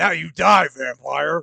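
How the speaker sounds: deep, low, guttural beastly snarl. As if a snarling creature has cornered its prey and is delivering a final threat, voice scraping up from deep in the throat. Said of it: "he says it all super low and growly".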